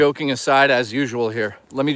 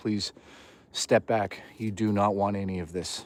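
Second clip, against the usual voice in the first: put-on low voice, lower and quieter; 5 semitones lower, 10 dB quieter than usual. Showing what gets said to a snake that comes too close, in a low tone voice. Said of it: "This is my uh, low tone voice".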